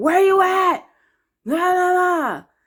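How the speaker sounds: very high, hard, loud, drawn-out hollering. Retelling how a man honked and yelled from his car: imitating someone yelling. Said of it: "loud and hard and just yelling, like".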